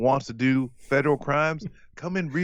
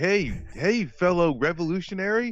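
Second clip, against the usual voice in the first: high, slow, fake-friendly tone; 5 semitones higher than usual. Mocking how an undercover cop talks to activists: mocking imitation of an undercover cop. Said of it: "they talk about, like".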